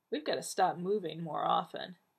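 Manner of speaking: ordinary delivery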